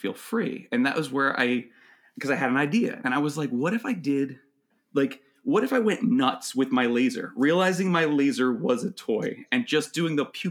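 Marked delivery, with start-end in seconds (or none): none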